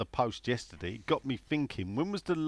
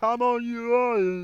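very high, very slow, drawn-out put-on French accent; 11 semitones higher, 5 dB louder than usual. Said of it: "that was my French impression".

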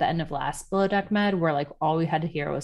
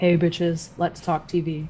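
voice sunk way down, deep and more intense. Host shows how she sounds on the show versus at work: much lower voice. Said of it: "i'm like two octaves down i'm like".

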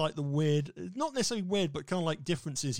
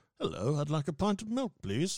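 polite screen-spy voice. Imagining a film title, doing a Roger Moore impression. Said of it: "That's not a bad impersonation".

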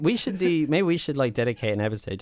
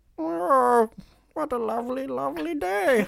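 put-on old miser voice, pitched higher; 13 semitones higher than usual. Acting out a film line after another speaker: Tom Hardy as Scrooge voice. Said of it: "Hardy is Scrooge".

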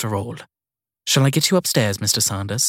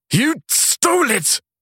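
furious snarl, pitched way up. Reading a man's furious accusation at another man, snarling. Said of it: "He snarled".

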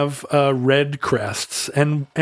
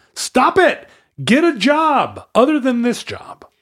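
put-on very high, drawn-out yell swooping upward; 10 semitones higher than usual. Standing beneath a tree, retelling shouting up at him. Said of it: "I'm just shouting at him".

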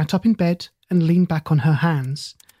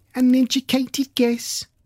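high, squeaky, mocking voice; 8 semitones higher than usual. Reading a story, a girl mimics another child: mocking squeaky voice. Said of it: "Millie mimicked with a squeaky voice".

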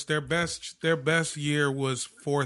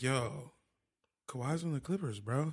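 put-on calm drunk tone, much quieter; 9 dB quieter than usual. Retelling telling his friend Dan the news while drunk, retelling a calm drunk remark. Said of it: "I said it just like that".

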